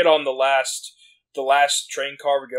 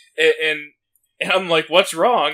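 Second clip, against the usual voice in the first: ordinary talk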